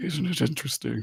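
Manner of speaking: little whisper. Voicing someone beside a glider rider who asks a question: whispering. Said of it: "hearing that little whisper again".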